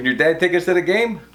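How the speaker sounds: usual speaking voice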